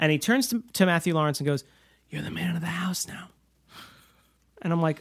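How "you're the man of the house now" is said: sincere, earnest, heartfelt, hushed whisper. Retelling a movie line to Matthew Lawrence: earnest Robin Williams whisper. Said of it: "in earnest Robin Williams voice".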